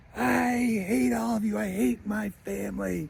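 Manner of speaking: put-on high-pitched, slow, angry and hurt child outburst. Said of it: "then he gets angry again".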